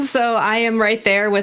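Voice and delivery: ordinary talk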